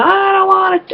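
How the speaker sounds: acted high scream. Retelling refusing the electroshock as it began: reenacting a scream. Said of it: "I was screaming".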